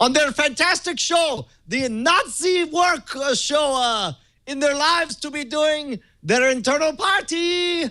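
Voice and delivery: attempted Cuban accent, put on, pitched very high. Reading a quote aloud for a guessing game, as asked: attempted cuban accent. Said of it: "read it in a Cuban accent".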